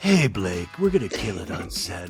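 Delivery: very deep, low, seductive, sultry sexy voice. Imitating a dude's two A M voicemail: imitating a sexy voice. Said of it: "he's using sexy voice and stuff".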